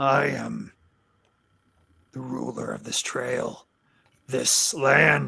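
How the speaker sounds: rough, creaky, raspy orc voice in broken common. Voicing an orc who comes walking up, speaking in broken common. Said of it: "he starts speaking in kind of broken common".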